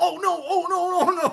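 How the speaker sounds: panicking, high-pitched voice. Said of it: "And I was panicking".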